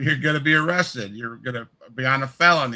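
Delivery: normal talking voice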